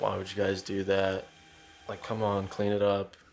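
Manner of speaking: super monotone, deadpan, flat, level dad voice. Retelling a friend's dad reacting to the damage, in a super monotone voice. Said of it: "His dad's like super monotone".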